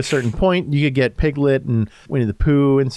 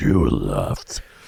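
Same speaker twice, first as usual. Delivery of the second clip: very low, deep growling voice; 3 dB quieter than usual. Showing how the giant Winnie the Pooh should sound: imitating a low growling voice. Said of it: "that low growling sound to him".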